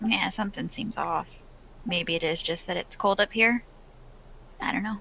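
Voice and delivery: hushed whisper. Character in an acted scene speaking to a companion, whispering. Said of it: "so I'm just gonna whisper".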